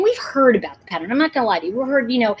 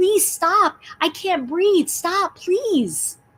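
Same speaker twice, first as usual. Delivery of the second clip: desperate, pleading, slow and pitched up; 7 semitones higher, 3 dB quieter than usual. Recounting what a man said while he pleaded for his life, retelling desperate pleading. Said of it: "He was pleading for his life".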